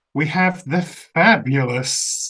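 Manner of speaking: slow, heavily sarcastic, mocking drawl. Introducing number seven on a list, calling her fabulous: sarcastic. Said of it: "I'm using that very sarcastically".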